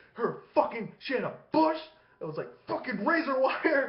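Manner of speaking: dad voice pitched very high. Retelling a story the father told, doing the father: imitating dad. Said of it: "So this is my dad".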